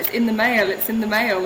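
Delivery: normal talking voice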